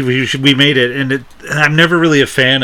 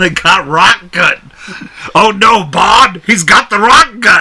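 loud, booming, pitched-up cartoon caveman voice; 7 semitones higher, 5 dB louder than usual. Replying to someone who says they sound like a Flintstones character, in a Flintstones character voice. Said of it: "You sound like a Flintstones character".

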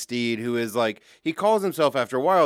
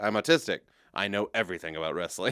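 play-acted dry, matter-of-fact, low deadpan; 5 semitones lower, 6 dB quieter than usual. Retelling a friend's reply to a remark about wrestling: imitating Ethan's deadpan delivery. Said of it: "just looks back with a straight face and goes".

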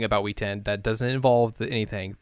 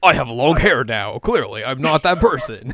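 cheesy dubbed-anime delivery, loud; 5 dB louder than usual. Retelling an anime scene, voicing Izuru in a Yu-Gi-Oh! dub-style voice. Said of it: "Why did you just become, like, the Yu-Gi-Oh! Dub?".

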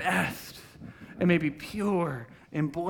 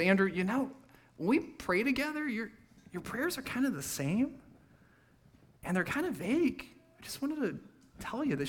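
sweet, gentle, soft tone, higher pitch; 6 semitones higher, 5 dB quieter than usual. Quoting what his wife Shay told him, imitating Shay, put-on sweet, gentle. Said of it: "She said to me so sweetly and so gently".

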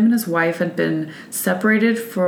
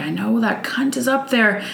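reenacted screaming in a higher pitch; 5 semitones higher than usual. Recounting his ex-wife pounding on the door: retelling a woman's screaming. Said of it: "you could hear her screaming".

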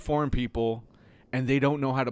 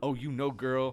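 put-on suave flirty voice, quieter; 4 dB quieter than usual. Retelling how a cashier on a show answers someone: imitating a suave flirt. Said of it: "is just, like, suave".

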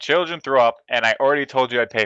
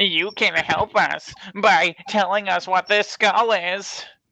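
mocking, slow, high-pitched, doddery old-timer voice; 8 semitones higher than usual. Playing a character mocking an old person, asking about a skull. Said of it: "look like I'm mocking an old person".

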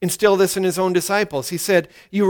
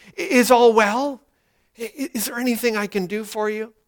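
put-on tender, caring voice, higher; 3 semitones higher than usual. Acting out Naaman asking a servant if all is well: imitating Naaman's tender voice. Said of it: "you can almost hear the tenderness in his voice".

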